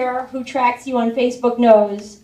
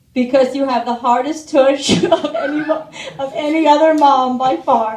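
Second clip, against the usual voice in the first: ordinary talk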